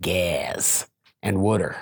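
Philadelphia accent, heard on gas and water. Showing how regional the word gas is, philly accent. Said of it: "I'll give you the Philly accent".

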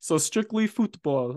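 put-on French accent on football. Telling a story about being scolded for saying soccer, in a french accent. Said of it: "that was like French accent there".

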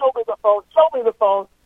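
high, play-acted, accusing, demanding, repeated yelling. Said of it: "So he starts yelling".

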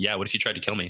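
acted deadpan delivery. Telling the listener how a woman looked her in the eyes and answered, retelling a deadpan reply.

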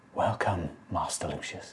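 very hushed, very soft whisper. Voicing a hunched being rising from a shadow, in a whisper. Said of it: "this time in a whisper".

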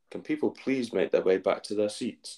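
plain

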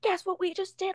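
very high, excited, jumping-up-and-down shriek. Retelling how mom and best friend came running up: retelling an excited scream.

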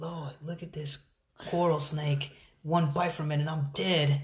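put-on soft, gentle Australian outback accent. Tell a friend who they sound like about coral snakes, doing a Crocodile Dundee impression. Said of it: "He's all like".

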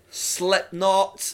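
said loudly. Listing favourite rock bands to the other speaker: loud. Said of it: "That was a loud one".

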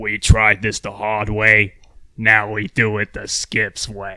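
very slow, deliberate, every word drawn out. Asked to do the voice on the spot: Skips voice. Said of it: "can you do the voice?".

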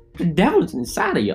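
put-on old woman voice. Acting out a shocked devout old woman overhearing a joke: imitating old lady Betty.

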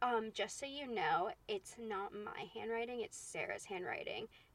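strange, bitchy, snide tone, slow and soft. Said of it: "said it in such a, such a tone".

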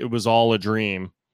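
ordinary delivery

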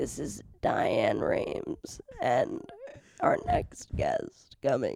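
hushed, strained, breathy voice. Speaker tries out a Diane Rehm impression. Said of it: "she had like a throat issue".

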